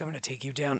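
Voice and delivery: seductive, very soft, low, hushed delivery. Describing how an awkward, shy man talks once he has his bow: imitating a sexy voice. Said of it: "he does it in a sexy".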